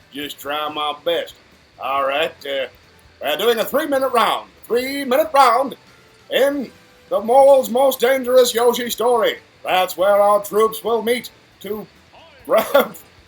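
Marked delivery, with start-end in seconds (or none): 3.2-13.0 put-on vintage, old-time TV broadcast announcer voice. Announcing a three-minute game round: old-time tv show announcer voice. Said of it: "Can I do old T V show impressions?".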